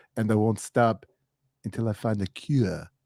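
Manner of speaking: goofy, low, funny put-on voice. Quoting a movie line about finding the cure: Arnold's funny voice. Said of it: "Arnold's got his funny voice".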